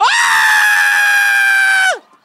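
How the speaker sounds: screaming crowd. Playing the audience in a talk-show bit: screaming audience. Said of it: "and then you scream".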